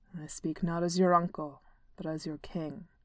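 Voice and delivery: low growling voice from deep down. Narrator reads Thorin addressing his niece after the other dwarves leave, growling. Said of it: "Thorin growled".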